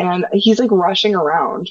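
ordinary delivery

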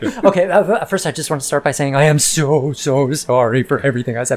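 brief, put-on, perfunctory, quickly got over with. Retelling a mother's apology to her son: imitating a rushed apology. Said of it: "it's a really quick apology".

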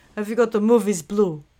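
put-on European accent. Retelling a phone caller's question, in a european accent. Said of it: "a man with a much more European accent".

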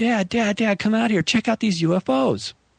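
mock, high-pitched hollering yell. Retelling calling out toward the house to dad: imitating own past yelling. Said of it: "I start yelling at the house".

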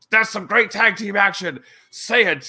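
high, loud, heckling yell.

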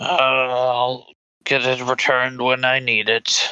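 put-on very slow, cranky, grumpy old man voice. Game master voicing an older character answering a player, in a grumpy old character voice. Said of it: "You're seeing an older [name]. / You're seeing an older [name]. / I need to send in my report to them on the masks. / It's a crab, so he's going to be grumpy, / And you suddenly hear this kind of a gr".

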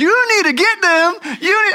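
high-pitched hollering yell. Retelling a football mom shouting at the referee: imitating a mom yelling. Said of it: "she's yelling at the referee".

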